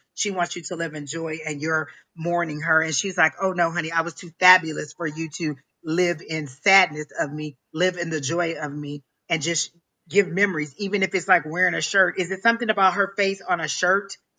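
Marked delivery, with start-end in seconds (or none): none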